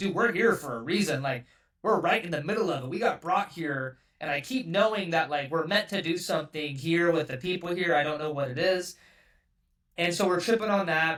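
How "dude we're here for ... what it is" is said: normal talking voice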